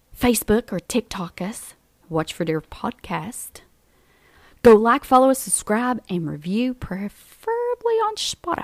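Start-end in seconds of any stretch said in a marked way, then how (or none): 4.6-8.6 high, wide-swooping cartoon-villain voice. Reading the podcast outro to listeners, sounding like the Grinch. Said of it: "You sound like the Grinch".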